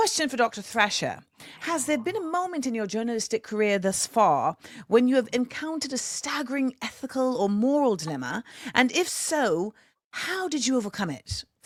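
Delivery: gentle London accent. Reading out a question for Doctor Thrasher: [name]' London accent. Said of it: "I always try to do it in my best London accent".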